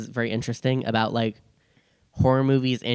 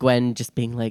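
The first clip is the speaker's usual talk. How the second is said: ordinary talk, nothing marked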